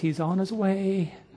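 acted soft, faint, weak, failing voice. Speaker retells a dying elder's reply to someone at his bedside, imitating a fainting voice. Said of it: "he said with a fainting voice".

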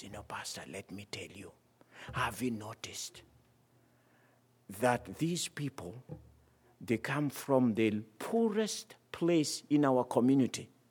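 voice dropped low. A pastor recounts the community president's answer to his question, in a lowered voice. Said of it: "he kind of lowered his voice".

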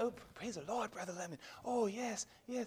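very hushed, soft, humble, pious churchy voice. Imitating people who fake humility: imitating a soft humble voice. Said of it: "being humble is not talking with a soft voice".

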